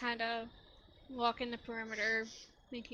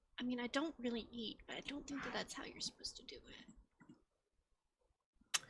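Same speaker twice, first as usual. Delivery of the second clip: slow, very quiet, hushed whisper; 9 dB quieter than usual. Voicing a character who leans over behind Sebastian: whispering in character. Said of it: "lean over and whisper".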